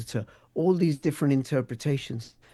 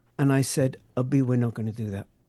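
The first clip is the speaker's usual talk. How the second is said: usual speaking voice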